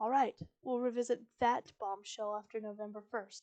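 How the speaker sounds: ordinary delivery, nothing marked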